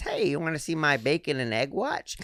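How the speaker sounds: chummy, friendly bar-regular voice. Imitating a bar regular's way of talking. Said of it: "he talks like this".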